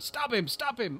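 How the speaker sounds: high, loud, urgent, repeated shout. Retelling a TV scene where a character shouts: imitating someone shouting. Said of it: "he shouts out".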